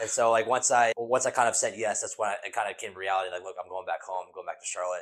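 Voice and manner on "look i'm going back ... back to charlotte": normal talking voice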